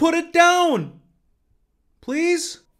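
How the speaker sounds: very high, drawn-out, half-hearted yell. Reviewing a movie, mocking a character's line, imitating a not-quite yell. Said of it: "he's not actually yelling".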